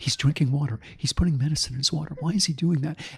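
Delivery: sotto voce golf announcer voice, hushed and quiet. Describing hearing his life narrated like a golf broadcast: sotto voce golf-announcer voice. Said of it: "the announcers do this Sato Sato voice".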